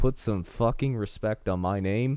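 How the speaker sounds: plain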